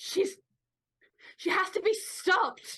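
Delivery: urgent, crying-out delivery. A character pulling hard against someone holding her back, screaming. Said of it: "Delilah is just like screaming".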